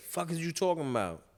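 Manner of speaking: put-on New York voice. Quoting how New Yorkers would say it: imitating a New Yorker. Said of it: "Like my New Yorkers would say".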